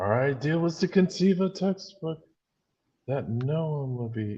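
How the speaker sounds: rising and falling newscaster-like, preacher-like sing-song. Mimicking how he speaks, going up and down for no reason. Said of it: "He like goes up and down for like no reason".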